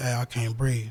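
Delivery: voice brought down low. Retelling telling officers who weren't listening: retelling own lowered voice. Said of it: "So I lowered my voice".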